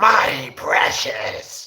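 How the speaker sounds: odd creature voice, high and loud. Showing off the voices they can do: Gollum voice.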